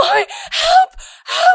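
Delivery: mock very high, loud, sobbing, panicked crying. A mother retelling her son calling out from his car seat while she drives, imitating a child losing it. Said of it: "just kind of starts losing it".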